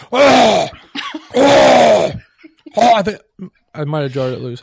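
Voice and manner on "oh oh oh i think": very loud, high, straining exclamations. Trying to clear something stuck in the throat: clearing something stuck in throat. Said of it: "there's something in my throat".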